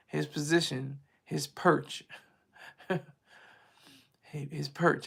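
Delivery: holding back a laugh. Explaining a theory, holding back laughter while talking. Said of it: "I'm trying not to laugh".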